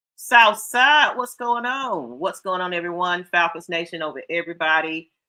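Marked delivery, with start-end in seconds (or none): none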